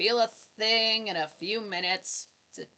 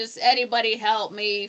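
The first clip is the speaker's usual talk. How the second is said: mock frantic screaming, desperate pleading tone. Recapping a story where a woman cries for help, retelling a frantic scream for help. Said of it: "She's just screaming".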